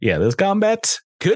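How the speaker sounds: laid-on Southern accent.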